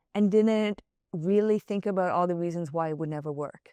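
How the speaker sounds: ordinary talk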